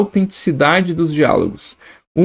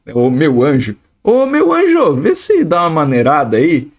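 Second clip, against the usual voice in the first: ironic, sarcastic, swooping sing-song. Showing ironic use of "meu anjo" in dialogue: ironic. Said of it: "é irônico".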